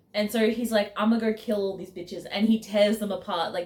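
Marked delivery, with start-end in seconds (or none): 1.0-2.3 put-on furious, enraged outburst. Retelling how a character reacts after the well is poisoned: imitating a furious character.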